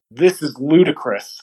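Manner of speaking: ordinary talk, nothing marked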